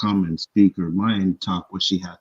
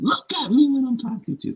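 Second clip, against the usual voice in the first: mock, shrill, raised, very high-pitched voice. Recounting an argument, retelling a raised voice. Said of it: "Like raised her voice and said".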